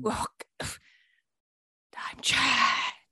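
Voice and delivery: very soft, barely audible voice. Someone talking into a microphone behind a curtain introduces himself, speaking very quietly. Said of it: "Why are you so quiet?".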